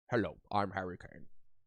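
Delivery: mumbled voice, like marbles in the mouth. Speaker puts marbles in mouth to sound like Harry Kane, Harry Kane impression. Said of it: "speak like you have marbles in your mouth".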